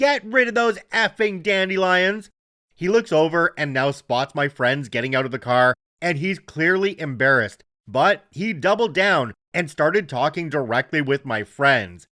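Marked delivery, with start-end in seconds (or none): 0.0-2.3 mock high, full-throated shout at the top of the lungs. Retelling a neighbor shouting across the driveway: imitating a neighbor shouting. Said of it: "shouts at the top of his lungs".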